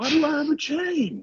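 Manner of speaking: very high shouting. Shouting in character while held by a chain: yelling in character. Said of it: "Why are we yelling?".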